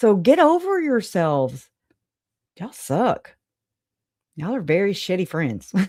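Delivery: heavy, mocking sarcasm in a swooping sing-song. Addressing former friends directly, sarcastic. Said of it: "I'm being very sarcastic right now".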